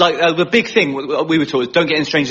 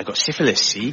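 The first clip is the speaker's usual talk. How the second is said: happy-go-lucky, cheerful West Country accent; 4 semitones lower, 4 dB quieter than usual. Showing how a word sounds in a West Country accent, West Country accent. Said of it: "but in the West Country".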